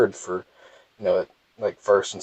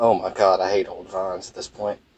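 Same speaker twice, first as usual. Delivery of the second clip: ordinary talk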